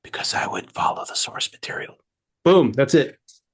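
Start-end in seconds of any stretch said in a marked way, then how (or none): 0.1-1.9 breathy whisper close into the mic. Whispering a line into the microphone in a Joe Biden-style whisper. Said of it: "I guess I'm gonna whisper this into the microphone".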